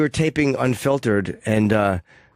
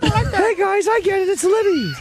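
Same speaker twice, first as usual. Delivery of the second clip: very high, squeaky voice. Remembering a talking yogurt lid character, a speaker does his voice: high-pitched Liddy voice. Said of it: "High pitched voice".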